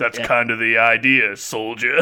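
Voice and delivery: put-on husky voice. Quoting a trailer character who wears a helmet, imitating a husky voice. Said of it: "a really, like, husky voice".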